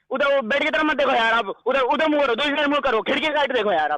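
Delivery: frantic desperate voice.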